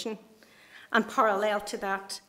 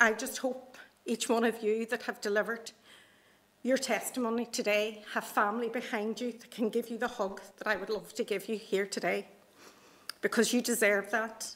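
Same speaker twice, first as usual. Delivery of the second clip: heartfelt, deeply moved, full of emotion. Addressing those who gave testimony today before handing over the questions, emotional. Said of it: "I'm really emotional about this".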